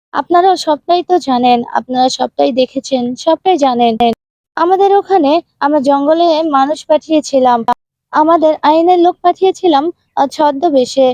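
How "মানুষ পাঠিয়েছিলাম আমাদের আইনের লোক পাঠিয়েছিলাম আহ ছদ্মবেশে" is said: ordinary delivery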